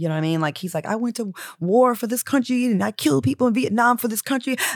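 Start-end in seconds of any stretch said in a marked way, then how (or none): 0.8-4.6 put-on high, crying, heartbroken father voice. Retell the phone call with the parents, imitating the heartbroken father crying. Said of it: "The father cries".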